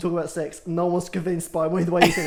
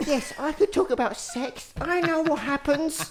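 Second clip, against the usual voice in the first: put-on very high, slow, drawn-out young-teen voice; 9 semitones higher than usual. Telling the other speaker how they sounded, imitating a thirteen-year-old. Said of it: "you literally sound like a thirteen-year-old".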